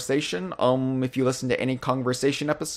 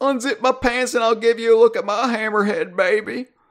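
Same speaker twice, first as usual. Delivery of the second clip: very high, goofy, silly put-on character voice; 10 semitones higher, 4 dB louder than usual. Reading a listener's comment about Donkey Kong sharks, doing a voice for it. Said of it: "I just like doing the voice".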